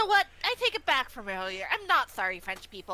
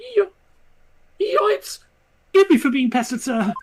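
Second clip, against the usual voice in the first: put-on French villain voice; 11 dB louder than usual. Voicing a game character after announcing it: obnoxious French accent like the Joker. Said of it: "the most obnoxious French accent while also trying to sound like the Joker".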